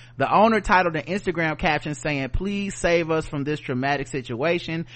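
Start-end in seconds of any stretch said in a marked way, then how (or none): none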